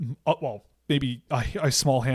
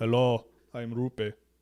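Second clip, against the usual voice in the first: put-on Finnish accent, put on; 3 semitones lower than usual. Hockey commentator voicing a Finnish player introducing himself: Finnish accent as Rupe Vestarinen. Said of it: "Can't speak with a Finnish accent".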